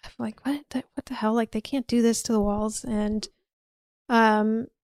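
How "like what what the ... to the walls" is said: mock muttering, quieter and faster. Retelling what a woman taking photos said: imitating someone muttering. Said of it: "kind of muttering like".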